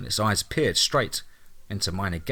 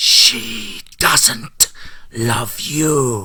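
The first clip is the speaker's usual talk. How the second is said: loud, furious, very angry rasp, drawn-out "you"; 5 dB louder than usual. Reading a story, a creature peers into the narrator's eyes, rasping very angrily. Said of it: "it rasped very angrily".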